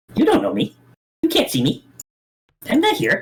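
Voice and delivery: extremely high, squeaky, swooping creature voice. Voicing a creature that looks at the player, the speaker uses an extremely high-pitched squeaky voice. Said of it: "in an extremely high-pitched, squeaky voice".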